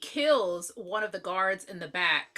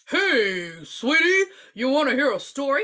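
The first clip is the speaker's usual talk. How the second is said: mocking old grandpa voice, higher and louder; 5 semitones higher, 5 dB louder than usual. Retelling a movie's opening scene: imitating an adult acting as an old man. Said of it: "No kid sounds like this".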